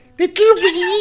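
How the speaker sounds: very high, loud put-on falsetto squeak.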